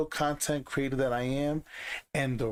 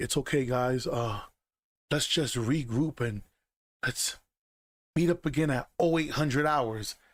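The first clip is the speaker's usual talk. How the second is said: calm, composed, reassuring professional gamer voice. Imitating a teammate who acts calm and professional: mocking calm professional gamer. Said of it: "they wanna talk and be like".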